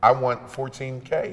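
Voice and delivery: ordinary talk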